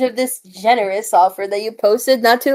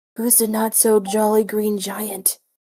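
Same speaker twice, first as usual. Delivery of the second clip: soft, hushed half-whisper under the breath; 7 dB quieter than usual. Asking a potion seller about a watching giant: half-whispering. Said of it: "I whisper".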